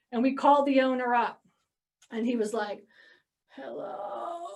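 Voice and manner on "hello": put-on faint, breathy whisper in a very old man's voice. Retelling a phone call to a property owner who answered: imitating an old man's hello. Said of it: "you could just tell he was like old as dirt".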